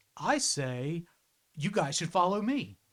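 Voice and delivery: cocky, charismatic swagger voice. Narrator voices a new voice heard by all three players, cocky Deadpool-like voice. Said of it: "like cocky voice, kind of like like Deadpool".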